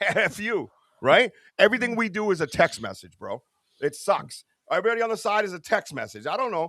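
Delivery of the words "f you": play-acted, amused, spoken through laughter. Retelling a joking text message, imitating saying it while laughing. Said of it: "and I'm laughing, going".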